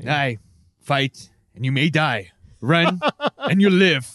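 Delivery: Australian-sounding speech. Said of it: "With an Australian accent".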